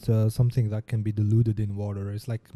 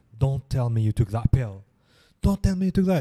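frantic panic, pitch rising; 2 semitones higher, 3 dB louder than usual. Retelling how a doctor reacted to a patient taking a pill: imitating a panicking doctor. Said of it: "the doctor was panicking".

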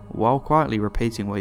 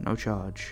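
much softer, lowered voice. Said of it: "he quickly lowers his voice".

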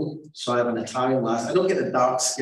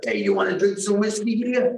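put-on New Jersey accent, pitched higher; 8 semitones higher than usual. Joking about talking like people in New Jersey: put-on New Jersey accent. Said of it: "that is the way he talks".

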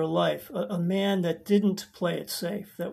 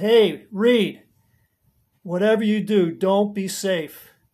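loud, shouted call from a distance; 8 dB louder than usual. Retelling calling out to a young neighbor on his skateboard, retelling a yell. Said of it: "I just yelled out".

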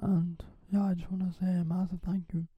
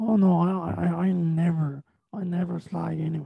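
usual speaking voice

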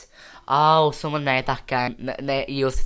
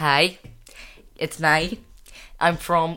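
Derry Northern Irish accent; 3 semitones higher than usual. Asked to do an accent, the speaker greets the others in a Derry Northern Irish accent. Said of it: "The accent I was doing there was Derry, Northern Irish accent".

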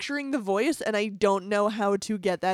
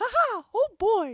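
very high-pitched little cartoon mouse voice; 13 semitones higher than usual. Asked what Mickey sounds like, give it a try: Mickey Mouse voice. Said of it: "Mickey Mouse".

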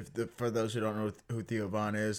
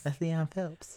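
put-on lisping voice. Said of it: "Why y'all talking like that for?".

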